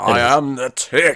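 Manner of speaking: loud, slow, over-the-top comic book hero voice. Quoting the Tick's catchphrase: the Tick's over-the-top comic book voice. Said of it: "the really over-the-top comic book voice".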